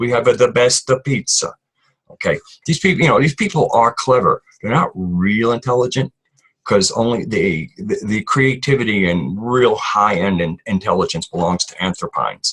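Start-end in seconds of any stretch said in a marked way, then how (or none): 0.0-1.5 put-on Italian accent, exaggerated for comic effect. Explaining how the pizza shop name Besta sounds: put-on Italian accent. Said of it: "it's like an Italian accent".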